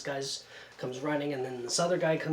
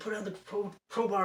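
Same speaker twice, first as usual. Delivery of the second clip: put-on scream, higher; 6 semitones higher than usual. Retelling a standoff with a man holding a sword: imitating someone screaming. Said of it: "he's screaming".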